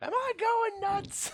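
high-pitched, slow mock yell. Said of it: "Unless you wanna yell out".

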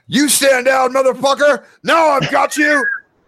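very high-pitched, loud shout. A man's voice answers Nash's order to stand down, shouting. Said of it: "A man's voice shouts out".

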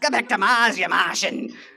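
laid-on Aussie voice. Quoting a man who picked on the speaker, in a broad Australian accent. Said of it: "In that really Aussie voice".

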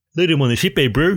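put-on New Zealand accent. Quoting the line a semi-famous New Zealand actor said, in a Kiwi accent. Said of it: "they gave him the Kiwi accent".

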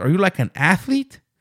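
mock Mexican accent. Retelling a stranger quizzing the speaker about whether they are an athlete, in a stereotypical mexican accent. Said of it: "he has that kind of stereotypical Mexican accent, which I'm going to do".

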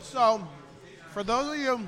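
talking through a mouthful, chewing. A show host starts addressing regular listeners mid-bite: talking with mouth full. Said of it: "excuse me, I'm chewing".

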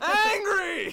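very high, very loud, shrill, wailing angry crying shout. Answering how he is today as an angry prophet: mock angry yell. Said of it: "an angry prophet denouncing the hypocrisy".

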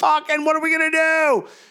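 panicked shout.

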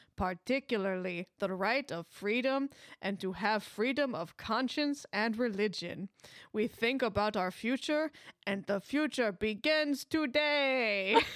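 imitated Polish accent. Imitating a man's speech for listeners, in a really good polish accent. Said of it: "that was a really good Polish accent".

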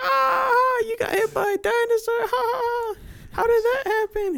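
very high, slow jeering with stretched ah. Retelling how the doctors reacted to the injury: imitating doctors mocking. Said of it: "they started roasting me".

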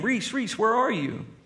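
big, high, angry teacher-style yell. Retelling calling a lost girl's name in a crowd, retelling an angry teacher yell. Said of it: "our big, angry teacher voices, and we start yelling her name".

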